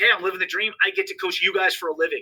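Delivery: ordinary delivery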